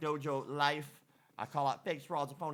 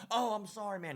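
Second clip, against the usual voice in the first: put-on drunk, tipsy voice, pitched up; 6 semitones higher than usual. Retelling a stranger at a club urinal apologizing: imitating a drunk man. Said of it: "He was quite obviously drunk".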